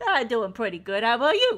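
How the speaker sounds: very loud, swooping, belted cartoon cat voice. Voicing May answering a greeting: bad Meowth impression. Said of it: "it's kind of like a bad Meowth impression".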